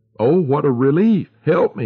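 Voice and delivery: high, groaned appeal. Narrator reads the beaten man lying bleeding by the road, groaning. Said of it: "he groaned".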